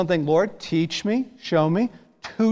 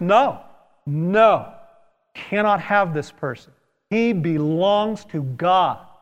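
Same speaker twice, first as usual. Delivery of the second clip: acted, put-on stern tone, slower. Acting out a confident declaration against enemies on someone's behalf, in a mock-stern voice. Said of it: "in a stern voice".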